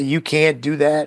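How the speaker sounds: put-on crying, tearful voice. Retelling how she kept protesting: imitating someone crying. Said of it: "to just cry and say".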